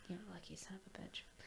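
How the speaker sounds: fast, soft, snide whispered jab.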